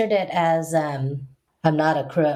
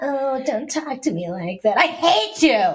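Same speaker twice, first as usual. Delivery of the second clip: put-on higher drunk woman voice; 8 semitones higher than usual. Retelling how a mother sounded when drunk: imitating a drunk mother. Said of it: "her voice would change".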